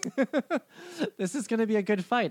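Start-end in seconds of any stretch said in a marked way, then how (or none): 1.2-2.3 high, fast, excited gushing. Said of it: "I'm excited".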